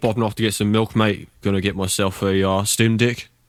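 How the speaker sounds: overdone, thick, broad rural New Zealand accent. Speaker showing an accent he says isn't his: exaggerated broad New Zealand accent. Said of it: "I don't sound like that very much. Uh, a lot of our agricultural society does".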